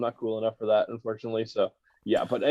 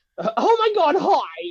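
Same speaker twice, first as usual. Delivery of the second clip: very high, drawn-out, put-on girly voice; 5 dB louder than usual. Retelling a drive-through skit, in a high-pitched girly voice. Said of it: "have like this really high-pitched girly voice".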